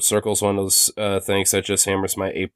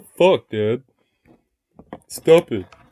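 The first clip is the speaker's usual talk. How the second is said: indignant, offended dog voice; 4 semitones higher than usual. Voicing the dog's thoughts as it looks up at its owner: voicing the offended dog. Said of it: "he's looking at me like he's offended".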